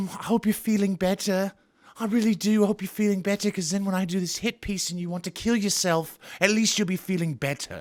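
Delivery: bad, terrible, fake put-on British accent. Mocking a woman who gave an interview, in a terrible British accent. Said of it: "That's my terrible British accent".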